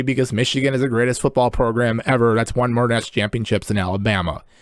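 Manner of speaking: ordinary talk, nothing marked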